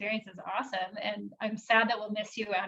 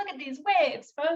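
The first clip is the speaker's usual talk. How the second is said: higher TV weatherman news voice; 6 semitones higher than usual. Retelling how Jack joked during a storm at the beach: Jack's weatherman news report voice. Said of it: "weatherman news reports".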